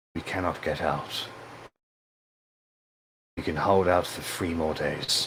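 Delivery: gentle, soft but commanding, authoritative tone. Voicing a character whose people are surrounded, soft but authoritative. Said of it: "a much more softer, though kind of like an authoritative voice".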